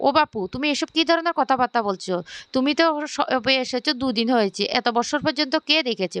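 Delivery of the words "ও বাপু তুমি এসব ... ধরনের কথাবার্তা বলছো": plain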